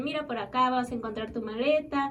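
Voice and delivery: normal talking voice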